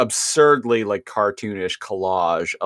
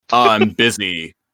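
put-on snarky voice; 3 dB louder than usual. Retelling a cartoon scene and quoting the character: snarky Rhinox voice. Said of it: "snarky Rhinox is all like".

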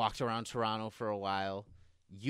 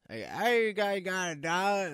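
mock near-scream, very high, held back; 9 semitones higher, 6 dB louder than usual. Retelling a man coming up to them outside asking for a dollar; imitating a near-scream. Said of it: "Like he was screaming, but he wasn't".

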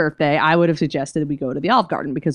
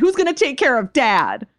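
mock, high-pitched, accusing, angry yell; 7 semitones higher than usual. Retelling a TV scene where the daughter yells at her mother: imitating someone yelling. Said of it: "she's, like, yelling at her".

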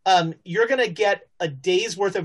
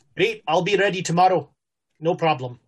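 put-on South African accent. Voicing a character agreeing to be ready tomorrow: South African accent. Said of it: "Did he go Scottish on us?".

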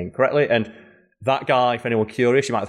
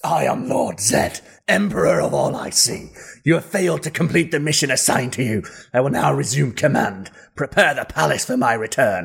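growling, monstrous emperor-like villain voice; 3 semitones higher than usual. Quoting a villain's first words, doing the Lord Zed voice. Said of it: "that's as close as I can get to the voice".

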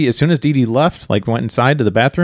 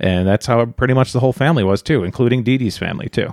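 ordinary talk

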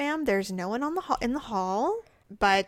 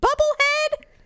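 very high, loud, shrill hollered call; 6 dB louder than usual. Retelling how a hospital neighbor called out in the dark: imitating someone calling loudly. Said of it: "Really loud".

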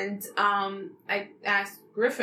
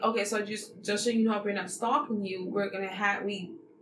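normal talking voice

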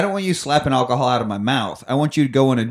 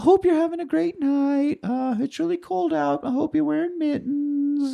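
put-on very high, earnest, caring, sweet little-kid voice; 3 dB quieter than usual. Retelling a movie scene of a kid talking to Santa: imitating a sweet concerned kid. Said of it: "all concerned about Santa's well-being".

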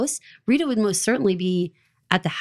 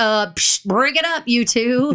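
very slow, drawn-out, every word stretched and broken up; 2 semitones higher, 4 dB louder than usual. Imagining Lawrence interrupting a meeting: imitating Lawrence breaking it up. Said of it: "came bopping in that room, like".

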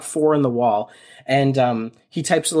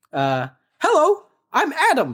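put-on android voice, pitched much higher; 14 semitones higher than usual. Retelling a scene, the speaker voices an android introducing itself: Adam android voice. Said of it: "A different voice".

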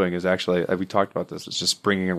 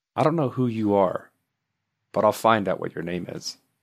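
mock-creepy, eerie put-on delivery. Repeating the other speaker's words back with their intonation: mock-creepy tone. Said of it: "when you say it like that, it sounds creepy as hell".

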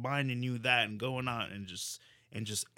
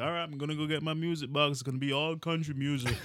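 put-on needling voice; 4 semitones higher than usual. Retelling what a coworker says to annoy: imitating Rob's voice. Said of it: "I like that voice you did for Rob".

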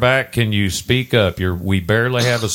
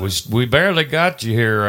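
ordinary delivery

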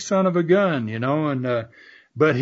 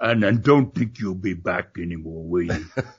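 put-on deep, low-pitched voice in a Dutch accent; 9 semitones lower, 4 dB quieter than usual. Retelling what a man said after breaking Roy's ribs: Dutch accent. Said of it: "he told me in that accent".

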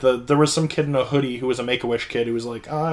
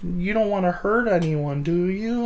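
mimicked cautious, tiptoeing tone, pitched higher; 6 semitones higher than usual. Retelling how the psychiatrist greets on the phone: imitating overly careful ledge-talk voice. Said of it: "she talks to me like I'm on a ledge".

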